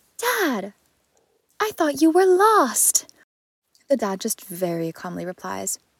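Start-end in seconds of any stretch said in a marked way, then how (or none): 0.2-3.1 put-on very high, loud, gasping, startled little kid voice. Retelling a little girl who stopped her bike and saw her dad: imitating a gasping little girl. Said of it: "she gasps, and she goes".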